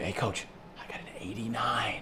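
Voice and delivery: hushed, secretive whisper under the breath. Retelling how a player tells the coach a grade: imitating a player whispering. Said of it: "They'll whisper to me".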